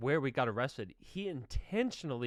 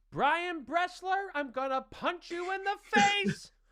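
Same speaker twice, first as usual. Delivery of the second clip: put-on very high shout from afar; 3 dB louder than usual. Getting out of the car, the speaker retells hearing Nicky yell, imitating Nicky yelling. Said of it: "I hear Nicky yelling".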